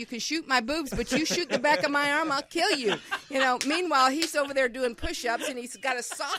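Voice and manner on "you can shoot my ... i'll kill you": loud shouted yelling. Retelling yelling at the guys during a shoot: imitating own past yelling. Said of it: "yelling at the guys".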